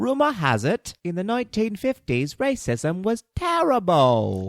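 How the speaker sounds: bad put-on Cockney accent, very high and slow. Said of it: "our terrible, terrible accents".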